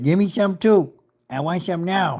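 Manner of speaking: put-on pleading, begging dog voice. Voicing the dog that is trying to sneak food: voicing the begging dog. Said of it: "And Skittles is right".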